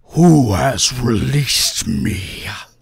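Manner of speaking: big, loud, resounding, booming voice. Speaker voicing a character for the group, loud booming voice. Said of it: "In a loud, booming voice".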